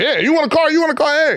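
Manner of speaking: very high, hyped-up game show host voice. Describing a father co-signing cars for relatives, imitating a game show host. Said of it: "like he was a game show host".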